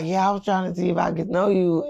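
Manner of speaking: whispered speech. Retelling a client's approach during a bathroom break: imitating someone whispering. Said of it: "whisper to me".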